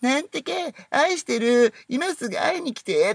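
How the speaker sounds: high, slow, sweet, clingy sweet-talking voice.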